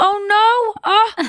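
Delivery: oh said very high and drawn out. Showing a habit picked up from another performer: Jennifer Aniston impression. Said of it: "I do Jennifer Aniston things of".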